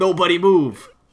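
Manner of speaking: high-pitched, borrowed, put-on commanding voice. Retelling a show scene where a character imitates Nick with a deep voice. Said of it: "like, a Nick impression".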